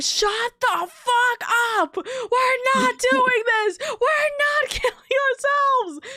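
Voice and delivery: acted, very high, shrill, climbing excited shriek. Recounting a reaction to a Snapcube announcement, retelling a scream. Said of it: "I started screaming".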